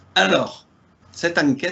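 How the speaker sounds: southern French Marseille accent. Introducing this investigation, slipping into a Marseille accent. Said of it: "je prends l'accent marseillais à chaque fois".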